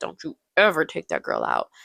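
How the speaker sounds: calm but scary, with swooping pitch. Retelling a movie scene, one character threatening another, in a calm but scary Miranda Priestley voice. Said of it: "In a calm but kind of scary Miranda Priestley voice".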